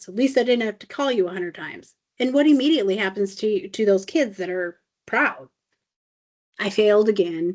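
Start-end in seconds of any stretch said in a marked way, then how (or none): none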